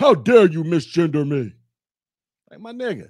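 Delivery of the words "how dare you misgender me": deep, low, booming god voice. Imagining a bearded man protesting being misgendered: deep Zeus-like voice. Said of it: "he can be talking like Zeus".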